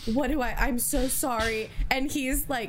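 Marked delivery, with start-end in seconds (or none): 0.1-1.7 put-on scared, distressed, slow and upset. Retelling a moment from Bake Off: imitating Deborah sounding upset. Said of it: "she's so upset and is like".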